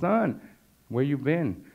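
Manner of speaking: weeping, tearful, high, drawn-out voice. Retelling what a mentor said to him while weeping: imitating someone crying. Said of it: "now he starts to weep, and he cries".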